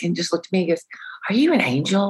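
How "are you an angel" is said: put-on, high, sweet, innocent little voice. Retelling what he once asked the speaker, imitating his innocent voice. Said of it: "he had this most innocent voice".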